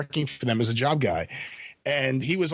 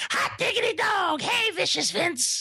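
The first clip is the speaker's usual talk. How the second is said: squeaky, very high, slow, drawn-out goody-two-shoes voice. Doing an impression of a radio co-host: imitating the Mat Rat's voice. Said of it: "And the Mat Rat's voice, let me try to do it".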